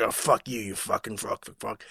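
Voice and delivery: whispered, mumbled, gruff tough-soldier voice. Retelling a game character's dialogue voiced by Mickey Rourke: gruff mumbly military speak. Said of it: "edgy, mumbly, gruff military speak".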